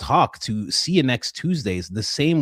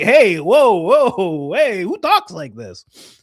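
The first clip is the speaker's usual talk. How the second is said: everyday, drawn-out North American man's voice; 7 semitones higher, 7 dB louder than usual. Imitating how a man in north america reacts: imitating an american man. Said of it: "a man in North America is just like".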